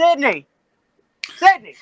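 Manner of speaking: shrill, very loud, high-pitched yelling. Calling to someone in another room: yelling a name. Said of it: "I'm gonna yell real quick".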